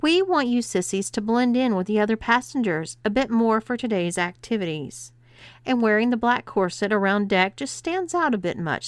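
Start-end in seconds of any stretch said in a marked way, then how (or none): none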